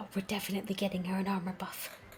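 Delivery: whispering aside. Voicing a character whispering to her husband: whispering to her husband. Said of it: "you can still hear her whispering to her husband".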